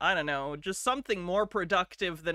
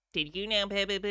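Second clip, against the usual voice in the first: put-on nasal AI narrator voice; 2 semitones higher than usual. Asking listeners if they know the voice: nasal TikTok AI voice. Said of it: "It's kind of nasally".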